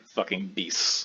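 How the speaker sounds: disdainful, scornful voice. Voicing the captain after the fight with the beasts: disdainful captain. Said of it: "he's clearly disdained at this".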